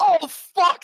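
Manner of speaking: shouting. Voicing Boris, who realizes something while walking away: yelling. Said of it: "and then yells out".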